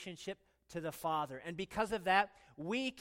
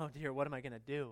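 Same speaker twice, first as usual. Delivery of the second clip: put-on worried, fretting voice, pitched lower; 5 semitones lower, 3 dB quieter than usual. Joking about God fretting helplessly: mock fretting as God. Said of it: "He's probably twiddling his thumbs up there going".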